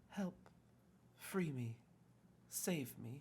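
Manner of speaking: put-on faint, ephemeral, very high small-child voice. Voicing a faint ghostly voice asking for help: faint small child's voice. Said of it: "it sounds almost like a small child".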